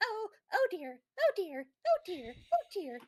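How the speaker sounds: high-pitched, squeaky, mouse-like voice. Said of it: "mousy researcher who squeaks".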